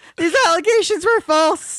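voice pushed way up, cartoon-style. Rereading a line from a statement in the Morty voice. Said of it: "I read it in the Morty voice".

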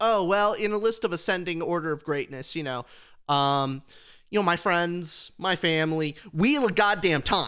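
ordinary talk, nothing marked

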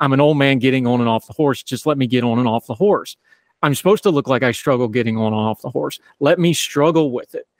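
ordinary delivery

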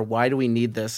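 ordinary talk

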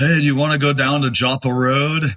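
put-on Baltimore accent. Repeating someone's tip on how to imitate Baltimore speech; Baltimore accent impersonation. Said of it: "the best way to do a Baltimore impersonation is to say".

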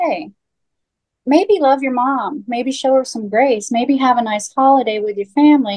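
laid-back, easygoing, gentle tone. Imitating the son, in a more chill way: imitating Sam, chill. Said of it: "more chill way".

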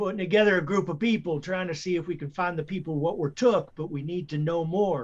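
shouting. Calling out in character to a crowd in town: yelling. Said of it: "I just yell".

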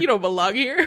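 put-on sassy voice. Retelling what Zoe said on finding him at her tent: imitating Zoe with sass. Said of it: "she had a little sass in it".

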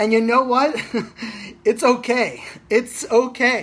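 said with a laugh, very slow and drawn out. Speaker talking about what they realized this past weekend, laughing. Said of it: "I say that with like a laughing manner".

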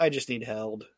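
put-on tearful voice. Retelling a wrestling segment where Lawler keeps crying: imitating Lawler crying. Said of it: "And Lawler's still crying".

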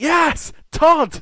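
very high, very loud, happy, joyful shout. Retelling a fan at a Ring of Honor show, mock-shouting happily. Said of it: "He just shouted".

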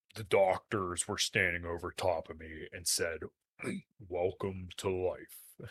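low, deep voice, taken slowly. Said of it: "I'll do my [name] impression".

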